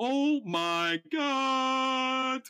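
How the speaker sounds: worst-ever line reading, very high and drawn out. Mocking how someone delivered a line: terrible line reading. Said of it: "in one of the worst line readings ever".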